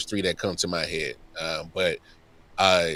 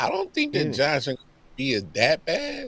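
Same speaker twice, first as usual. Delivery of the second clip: very high, swooping, doubtful, unconvinced tone; 10 semitones higher than usual. Giving a view on a football team to another speaker: skeptical tone. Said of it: "You said that with a lot of skepticism in your voice".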